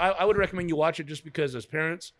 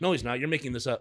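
plain

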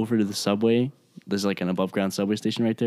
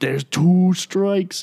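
very high, loud screaming; 10 semitones higher, 6 dB louder than usual. Recalling a Red Sox game, retelling screaming at people on the streets. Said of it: "I'm like screaming at people on the streets".

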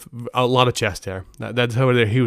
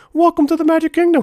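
squeaky voice, high-pitched and loud; 6 dB louder than usual. Kept up the whole trip to annoy a wife: Mickey Mouse voice. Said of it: "I kept doing the Mickey Mouse voice literally the entire trip".

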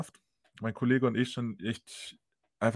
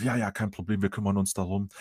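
put-on nice, eager, motivated tone, much lower pitched; 4 semitones lower than usual. Retelling what a group of people replied, mimicking a nice, motivated tone. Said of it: "voll äh, nett und motiviert gewesen".

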